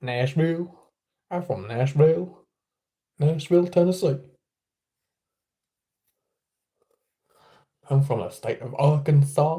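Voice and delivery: fake Southern accent, drawled. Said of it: "I'm not gonna keep doing that".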